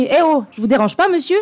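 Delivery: slightly annoyed tone. Scripting what to say to someone, in a slightly annoyed tone. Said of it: "avec un ton quand même légèrement agacé".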